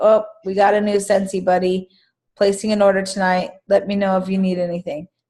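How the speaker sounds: rote, unexcited, by-the-numbers, unenthusiastic tone. Showing how a scentsy post sounds when just going through the motions. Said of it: "you sound like you're simply going through the motions".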